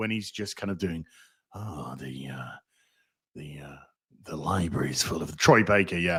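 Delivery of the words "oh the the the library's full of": very low, subdued, hesitant delivery. Imitating Indiana Jones when he's being subdued: subdued Indiana Jones voice. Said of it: "Harrison Ford's Indiana Jones when he's being subdued".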